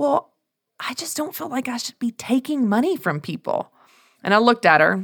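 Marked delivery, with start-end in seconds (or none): 0.0-3.7 hushed, almost a half-whisper. Retelling Margaret's answer to the speaker's question, almost a half-whisper. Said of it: "almost in a whisper".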